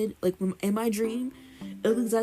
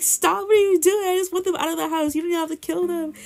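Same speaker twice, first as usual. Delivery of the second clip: frantic, crying, screaming, high and rushed; 8 semitones higher, 6 dB louder than usual. Retelling being chased into a corner with a bug-covered branch: retelling screaming and crying. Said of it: "I'm like screaming and crying".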